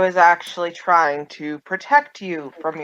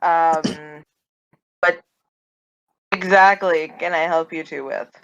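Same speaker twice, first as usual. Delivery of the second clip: smug, self-pleased, self-satisfied tone. Voicing a prisoner asking her captors what they want: smug. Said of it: "stop talking so smugly".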